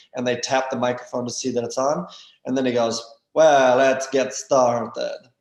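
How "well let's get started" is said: put-on thick, heavy Russian accent, loud and very slow. Imitating a former professor starting class, in a thick russian accent. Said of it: "in his very thick Russian accent".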